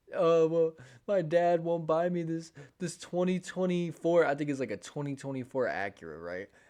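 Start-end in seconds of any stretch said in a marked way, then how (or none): 0.1-4.2 mock very loud, high, tearful crying. Retelling what she said while crying in the car: imitating someone crying. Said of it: "she's, like, crying".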